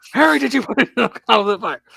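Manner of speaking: frantic, high-pitched, rough-edged voice. Mocking a player's claim to a calm voice during a game, as Dumbledore. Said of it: "Calm, as in Dumbledore and Goblet of Fire over here".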